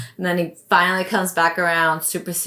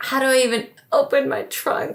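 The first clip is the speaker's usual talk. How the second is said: put-on nervous voice, pitched higher; 8 semitones higher than usual. Retelling own words when asked to open the trunk: retelling own nervous words. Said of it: "I'm so nervous".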